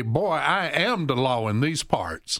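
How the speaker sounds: put-on old western judge voice, slow, southern accent. Retelling what a judge in old cowboy westerns would say: imitating an old western judge. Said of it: "the judge would say".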